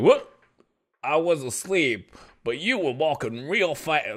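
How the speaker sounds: put-on monster voice with a Bronx accent. Describing a game where monsters react to walking fast, Bronx-accent monster voice. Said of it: "This is my monster voice".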